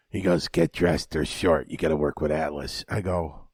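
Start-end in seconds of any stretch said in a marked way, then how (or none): 0.4-2.8 deep, low, dropped voice. Retelling what Altamore told him backstage: imitating Altamore. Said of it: "That's a great Altamore impression".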